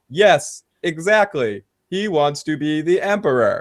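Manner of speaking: robot-like, mechanical voice. Retelling a character's answer to the emperor: imitating a robotic delivery. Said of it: "her response is so robotic".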